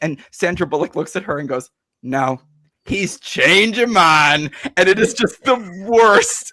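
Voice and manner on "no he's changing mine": bad Southern accent, very slow and drawn out. Recapping a film scene, the speaker quotes in a bad Sandra Bullock Southern accent. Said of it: "she puts on a terrible Southern accent".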